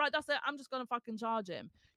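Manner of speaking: put-on angry voice. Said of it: "you just scream at each other and then just decide".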